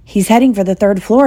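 ordinary delivery

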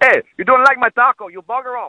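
bad, shocking put-on Mexican accent, very high. Describing a costume character and doing his line in a bad Mexican accent. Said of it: "throw out a bit of a Mexican accent".

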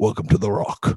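put-on Scottish accent. Answering a called-out name with a Sean Connery impression. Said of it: "Sean Connery".

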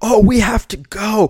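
mock yell, very high and drawn out. Retelling an argument, quoting a guy who yelled back at the speaker: retelling a yell. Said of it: "the guy yells back at me".

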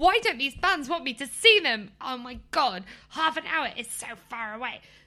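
loud, full-blown tantrum outburst. Retelling rolling on the floor over a gig: acting out a past tantrum. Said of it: "I was rolling around in a tantrum going".

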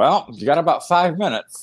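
put-on matter-of-fact, dead serious, neither cute nor mean. Retelling what the groom's mom said before the aisle: imitating a matter-of-fact remark. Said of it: "but very matter-of-factly".

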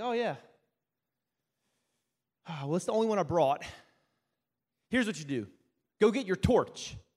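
put-on nonchalant, casual tone. Retelling his instruction to go get a torch: imitating a nonchalant tone. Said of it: "he said it so nonchalantly".

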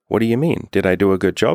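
cutesy bratty voice. Retelling what a partner asked afterwards: imitating her bratty, cute tone. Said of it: "bratty or, like, like, cute".

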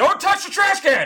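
put-on shrill, very high-pitched yell. Retelling being told off for slamming a trash can: imitating someone yelling. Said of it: "then you hear Ian".

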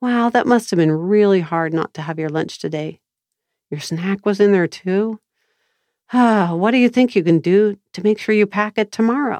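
gentle, soothing, calm and loving voice. Demonstrating an example line for listeners to try, in a calm, loving voice. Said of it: "in a calm, loving voice".

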